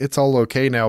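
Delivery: ordinary delivery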